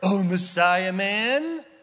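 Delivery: heavy acted satire and innuendo, dripping with disgust. Speaker retells people taunting Jesus, acting out dripping satire. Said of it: "dripping with satire, dripping with innuendo and disgust".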